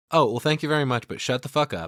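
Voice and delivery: put-on cordial, sweetly polite Southern accent. Retelling a show character's reply: Crystal cordial Southern accent. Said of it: "in that very cordial Southern accent".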